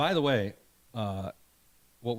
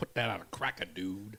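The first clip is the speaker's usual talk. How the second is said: put-on Cajun accent, dropping quiet at the end. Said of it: "But he also says".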